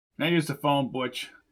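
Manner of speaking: ordinary talk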